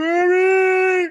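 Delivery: eerie, very high, loud, drawn-out wrestling-manager call. Retelling how the manager called out at WrestleMania: Paul Bearer impression. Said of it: "my best impression".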